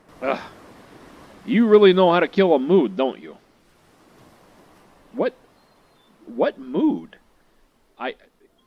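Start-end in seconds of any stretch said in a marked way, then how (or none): 0.3-3.4 raised, prickly, mean tough-guy voice, annoyed. Streamer voicing Yoichi after being asked to put Keitaro down, acting tough and mean. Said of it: "[name] really likes to pretend to be tough and mean on the outside, / He's not a very nice young man. / He's not a very nice young man".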